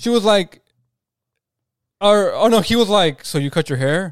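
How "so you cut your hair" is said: play-acted, expressionless, super stoic, level deadpan. Retelling what a tall guy asked a girl about her haircut: imitating a super stoic tone. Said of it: "super stoic".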